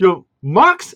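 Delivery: loud, slow, sarcastic praise.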